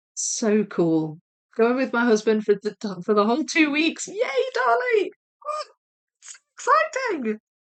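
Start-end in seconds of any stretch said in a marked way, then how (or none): 4.1-7.4 very high, squeaky, gushing squeal of delight. Talking about a planned two-week trip, excited squeaky voice. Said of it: "I've gone squeaky".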